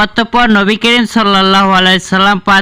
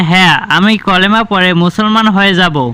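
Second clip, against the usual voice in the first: plain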